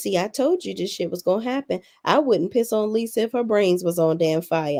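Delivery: normal talking voice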